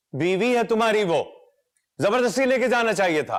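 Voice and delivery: loud, high shouting. In a family argument about taking a sick woman to a doctor, shouting. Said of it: "इतना शोर क्यों कर रहे हैं आप?".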